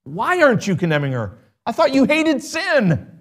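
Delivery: mock indignant, high-pitched, incredulous cry of disbelief.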